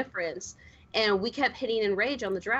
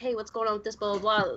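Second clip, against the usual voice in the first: usual speaking voice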